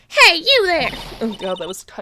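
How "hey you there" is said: overly high-pitched voice. Voicing a character calling out to someone: too high-pitched voice. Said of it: "too high-pitched".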